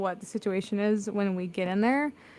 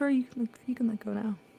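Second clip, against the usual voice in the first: whispered line in character voice; 2 semitones higher than usual. Leaning in very close to distract a character, whispering in character. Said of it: "just whisper".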